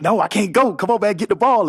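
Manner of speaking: urgent, high-pitched shout. Retelling yelling at a teammate to grab the fumble: retelling a yell. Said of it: "I'm yelling at him like".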